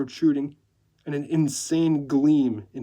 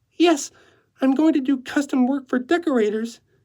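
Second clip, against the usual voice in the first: very high-pitched, fragile, vulnerable and pitiable voice; 11 semitones higher, 5 dB louder than usual. Narrator reading Natalie's answer to the man she is dancing with, high, vulnerable voice. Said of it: "in her high-pitched voice that sounded vulnerable and pathetic".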